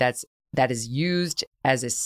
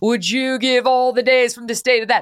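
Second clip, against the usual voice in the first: loud, high-pitched heroic voice projected outward; 7 semitones higher, 6 dB louder than usual. Comparing a commentator's point, the speaker slips into a Braveheart impression. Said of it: "that's Braveheart".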